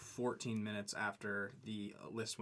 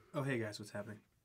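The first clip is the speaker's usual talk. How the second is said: unenthused, flat, low-energy, unexcited delivery. Co-host greeting listeners after being introduced on the podcast, unexcited. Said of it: "That was so unexcited".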